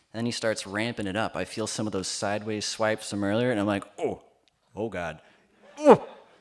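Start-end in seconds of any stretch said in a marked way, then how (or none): 4.0-6.0 acted, doubled-over groans and oohs of pain. Retelling being hit and doubling over: imitating groaning in pain. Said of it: "I'm doubling over in pain and pleasure".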